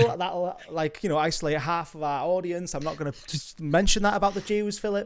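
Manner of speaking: ordinary delivery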